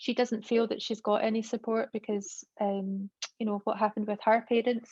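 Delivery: ordinary delivery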